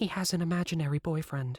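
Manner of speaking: soft, hushed tone.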